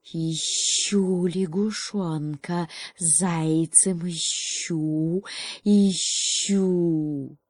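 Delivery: creaky, hissing snake voice. A narrator reads the snake's line in a story: hissing, creaky snake voice. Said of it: "прошипела своим скрипучим шипением".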